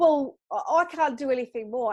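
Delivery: mock tongue-in-cheek, playfully sarcastic, facetious. Imitating therapists who blame others when vouchers aren't handed out: facetious imitation. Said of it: "I'm being a little bit facetious and a bit cheeky".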